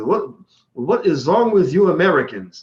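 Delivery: put-on German accent. Retelling what a German colleague asked him at the office, German accent. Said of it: "what he said in the German accent".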